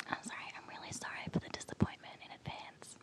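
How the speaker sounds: soft whisper, very hushed, barely voiced. Repeating an apology after being asked to whisper it: whispering. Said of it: "could you whisper that?".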